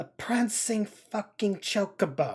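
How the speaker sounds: fed-up, exasperated tone. A man questioned about who gave his orders names the tavern, exasperated. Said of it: "He says it with enough exasperation".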